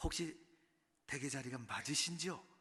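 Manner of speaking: acted-out cautious, tentative, very careful, polite tone. Retelling asking a seated gentleman about the seat: imitating own very careful asking. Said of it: "아주 조심스럽게 그분에게 물었죠".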